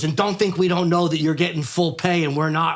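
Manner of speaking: plain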